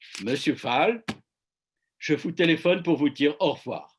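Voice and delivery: put-on strong German accent. Retelling a 2008 phone call to the Alliance; put-on strong German accent. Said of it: "avec son fort accent allemand".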